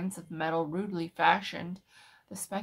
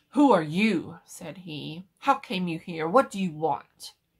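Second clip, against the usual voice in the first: stern, severe, much louder; 7 dB louder than usual. A man at his desk confronts the narrator; stern. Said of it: "confronted me sternly".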